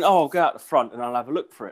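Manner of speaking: usual speaking voice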